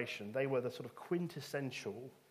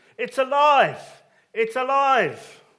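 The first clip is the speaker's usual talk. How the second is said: piercing, very high, very loud booming yell; 11 semitones higher, 16 dB louder than usual. Retelling an open-air preacher gathering a crowd, Frankenstein impression, shouting. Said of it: "That's my best Frankenstein impression".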